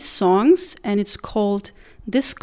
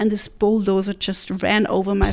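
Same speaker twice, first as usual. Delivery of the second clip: usual speaking voice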